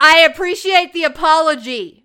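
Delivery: very loud, high voice projected for everyone to hear. Retelling what they said back to someone who apologized, retelling a loud reply. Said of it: "very loudly".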